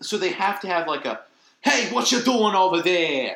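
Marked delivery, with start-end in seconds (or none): 1.6-3.4 loud put-on New York street accent. Explaining the accent Disney uses in Newsies, in a Newsies New York accent. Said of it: "Kind of New York accent".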